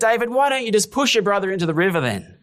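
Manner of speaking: high, swooping, exasperated sarcastic outburst. Retelling the dad's outburst at his son: imitating a sarcastic dad. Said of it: "boiled over in sarcasm".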